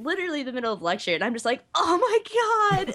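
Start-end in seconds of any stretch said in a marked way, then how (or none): 1.7-2.9 mock very high, panicked freaking out. Retelling getting candy dust blown in the eyes mid-lecture: imitating own panicked freak-out. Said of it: "freaking out".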